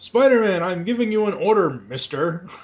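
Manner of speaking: high cartoon hero voice. Reading a comic page, the speaker hears a line in Superhero Squad Captain America voice. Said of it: "Superhero Squad Captain America's voice in my head".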